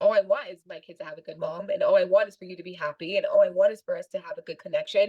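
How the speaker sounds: ordinary talk, nothing marked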